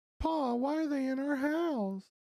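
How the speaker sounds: put-on little kid's voice. Describing a scene to the group, then voicing the kid: small child's voice. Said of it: "you hear the voice of the kid".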